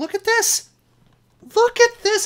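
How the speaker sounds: furious. Reacting to a bad card draw in a game: angry. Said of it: "I am so angry".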